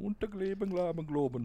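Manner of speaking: fake Norwegian accent, pitched high. Answering what a norwegian accent sounds like: fake norwegian accent. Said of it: "what the fuck's a Norwegian accent?".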